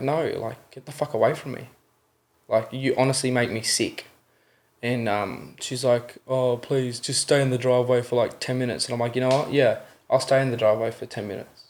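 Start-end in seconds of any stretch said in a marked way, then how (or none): 0.0-4.1 mock-agitated, worked-up outburst. Recounting an argument, quoting own reply to a woman urging them inside; retelling a worked-up outburst. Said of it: "and I was so worked up".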